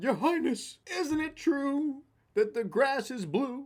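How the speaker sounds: very high, frantic hooting, hollering and screaming. Retelling a parable, the donkey screaming at the lion king: retelling a donkey screaming. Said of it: "the donkey starts screaming, like, hooting and hollering, freaking out".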